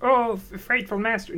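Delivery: high-pitched creature voice. Trying an impression from a Disney movie again after being urged: high-pitched creature voice. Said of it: "I'm going too high pitch".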